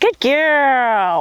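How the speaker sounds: exaggerated, dramatic, gushing tone. Speaker praising her while petting her during training: dramatic praise. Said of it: "I really dramatically praise her... with my voice".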